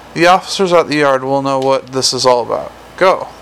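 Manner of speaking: ordinary delivery, nothing marked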